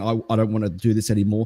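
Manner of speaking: normal talking voice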